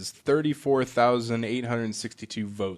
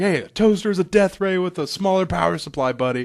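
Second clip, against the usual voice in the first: super angry, loud, shrill, ranting toaster voice; 8 semitones higher, 6 dB louder than usual. Retelling what a toaster in a game says: imitating a super angry toaster. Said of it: "super angry".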